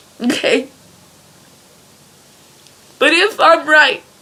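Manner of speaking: crying while talking. A speaker arguing a point through tears; crying while talking. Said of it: "because I'm crying".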